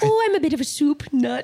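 fond British mother voice. Retelling a talk-show story, imitating a British mom. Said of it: "he does an impression of his mom".

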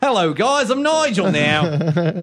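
slow, high, very drawn-out fake Australian accent. Reading a listener's letter aloud: put-on Australian accent. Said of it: "I just added the Australian accent".

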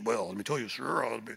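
affected, put-on deepened voice. Imitating guys answering when asked a question: imitating a put-on deep voice. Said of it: "they get that deep voice when you ask a question".

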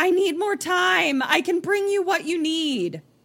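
very high, loud, shrieking scream. Retelling a woman screaming as cops come to take her, imitating her screaming. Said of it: "she just starts screaming into the ether".

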